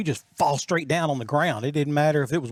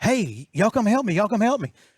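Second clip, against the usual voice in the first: put-on hollering, called out high; 6 semitones higher than usual. Retelling calling for help after breaking the fishing rod: imitating hollering for help. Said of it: "I'm hollering".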